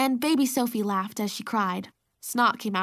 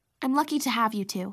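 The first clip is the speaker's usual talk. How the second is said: usual speaking voice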